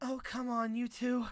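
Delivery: very high, airy, aspirated, breathy voice. Narrating, a storyteller voices a woman reacting to two companions, aspirated. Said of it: "She lets out an aspirated".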